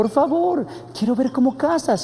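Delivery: very high, imploring, pleading voice. Zorrillo begs Jaguar to let him come along on the hunt, imploring. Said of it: "imploró Zorrillo".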